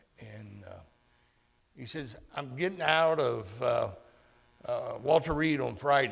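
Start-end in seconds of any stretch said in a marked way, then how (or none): 2.3-6.1 put-on loud, heavy rural country accent. Retelling a phone call from Haas, imitating Haas's big country accent. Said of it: "he's got the big country accent going".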